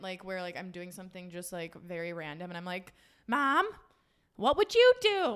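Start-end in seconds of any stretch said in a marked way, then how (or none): 3.3-5.4 high, loud, slow, playful calling voice. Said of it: "like, a funny moment".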